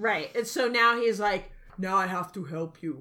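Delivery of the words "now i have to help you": put-on Austrian accent. Retelling a movie plot, quoting Schwarzenegger's character in a Schwarzenegger impression. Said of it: "Love your fucking accent. Your impersonation".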